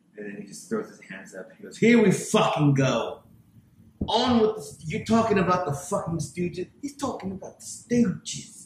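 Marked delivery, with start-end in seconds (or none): 1.8-8.7 put-on silly upper-class British accent, pitched up. Retelling a man's reaction to him, weird posh British accent. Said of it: "talking to me in like this weird posh, British, semi-stupid accent".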